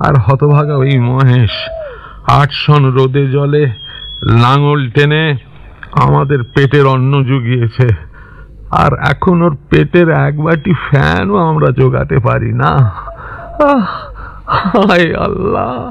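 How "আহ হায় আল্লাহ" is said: high, slow, drawn-out crying lament. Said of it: "বাপ তুমি কেঁদো না".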